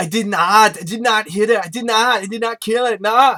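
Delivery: loud, high put-on voice. Reviewing a movie, recalling the actor's lines: Tommy Wiseau voice. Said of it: "Like Tommy Wiseau from The Room".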